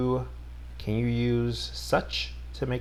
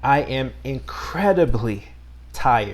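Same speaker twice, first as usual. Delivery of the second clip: incredibly strongly stressed with heavy emotion; 5 dB louder than usual. Example sentence about being tired after work, with emotional stress on incredibly. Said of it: "We say it with more emotion".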